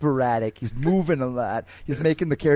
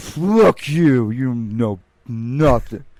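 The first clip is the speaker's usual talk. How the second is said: put-on drunk voice, louder; 6 dB louder than usual. Role-playing a drunk NPC who bumped into someone at a bar, drunk NPC voice. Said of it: "Let me be like a drunk N P C".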